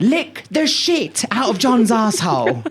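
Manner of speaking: high-pitched, swooping screaming voice.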